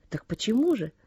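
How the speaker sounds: ordinary delivery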